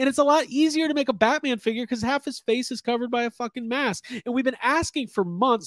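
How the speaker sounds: heated, worked-up, getting hot under the collar. Speaker ranting to his viewers, then apologizing to everybody: getting heated up. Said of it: "I'm getting heated up now".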